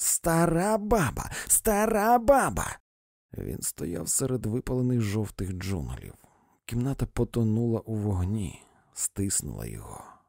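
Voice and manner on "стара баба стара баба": very high, unrelenting, drawn-out hollering. A woman keeps hurling an insult at a man: yelling relentlessly. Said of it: "волала місіс Крик, не вгамовуючись".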